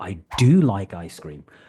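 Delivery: do leaned on firmly with strong stress. Explaining emphatic do in the affirmative, example sentence with strong stress on do. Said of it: "I'm putting the emphasis on the word do".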